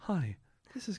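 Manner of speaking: robotic assistant voice. After a friend says she sounded like Alexa, redoing her greeting; Alexa voice. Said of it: "Do you know what she sounded like? Alexa?".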